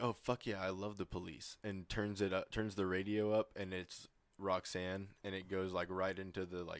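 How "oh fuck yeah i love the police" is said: imitated ironic, sarcastic cheering delivery. Retelling a scene where a character turns the radio up: imitating an ironic cheer. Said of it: "he says it, like, ironically".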